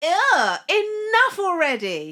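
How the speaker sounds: very loud, swooping mid-Atlantic accent. Trying a taught line with a put-on accent: transatlantic accent. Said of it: "I kinda went transatlantic".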